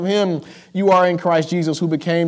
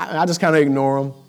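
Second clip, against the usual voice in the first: ordinary talk, nothing marked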